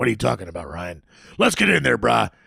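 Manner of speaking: loud, rough dad voice, pushed out. Explaining where his character's voice came from, the speaker does the Cyrus voice. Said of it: "channeling my impersonation of my dad".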